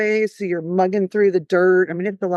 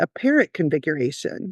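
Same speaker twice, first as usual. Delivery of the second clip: put-on serious deadpan tone, lower; 3 semitones lower, 3 dB quieter than usual. Retelling a client's joke during a plan review: imitating client's serious tone. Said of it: "my client looks at me real serious".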